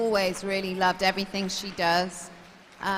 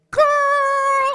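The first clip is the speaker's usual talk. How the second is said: very high, very loud holler, word stretched out; 12 dB louder than usual. Asked for an impression, doing a Kit impression. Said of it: "we all do a bit of an impression of her".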